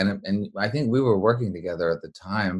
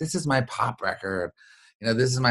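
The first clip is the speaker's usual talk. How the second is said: mock, bursting with excitement, eager; 4 semitones higher than usual. Retelling playing a record to a friend late at night: imitating own excited voice. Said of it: "I was so excited".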